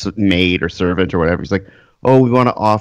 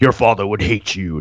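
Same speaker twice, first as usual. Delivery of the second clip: put-on really angry older voice. Retelling what the movie's advisor says to him: imitating an angry advisor.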